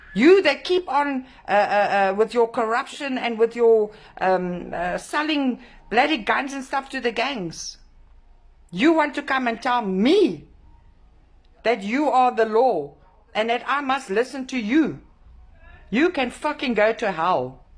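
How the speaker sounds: angry rant, tripping over words, halting fillers. Speaker addressing someone directly, later apologizing for the language; pissed-off rant. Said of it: "I'm I'm pissed off".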